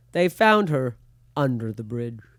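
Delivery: very low, deep narration voice with strange cadence. Trying an impression of a guy whose voice you love, do an impression with a weird cadence. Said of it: "whenever we're trying to do impressions of him... He has such a weird cadence".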